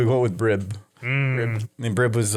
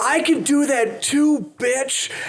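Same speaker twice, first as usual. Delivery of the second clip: put-on very high, drunken, wasted screaming; 3 dB louder than usual. Retelling how your drunk friend screamed through the floors: retelling a drunk friend's scream. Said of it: "he starts screaming through the floors like".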